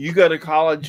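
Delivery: normal talking voice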